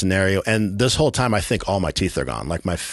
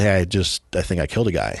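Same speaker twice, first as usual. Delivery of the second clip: ordinary talk, nothing marked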